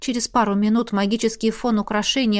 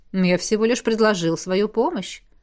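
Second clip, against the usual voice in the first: ordinary delivery, nothing marked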